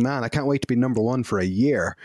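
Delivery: ordinary delivery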